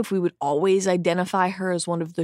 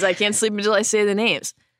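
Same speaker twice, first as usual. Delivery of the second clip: normal talking voice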